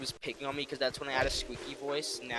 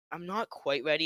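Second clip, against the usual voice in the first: ordinary delivery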